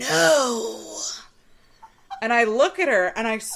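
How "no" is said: stage whisper with no stretched out. Retelling a coworker calling out as the speaker walked past: imitating a loud whisper. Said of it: "register of a whisper".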